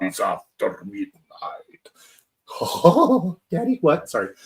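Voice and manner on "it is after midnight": low, hushed vampire voice. Recapping a film as Count Orlok greets his guest, Count Orlok vampire voice. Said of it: "with the voice".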